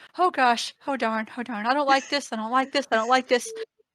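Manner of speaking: fretful, anxious, compulsive looping repetition. While everyone else stays calm, Virgil in his sniper window is heard up close, muttering under his breath. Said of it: "compulsively muttering to himself under his breath".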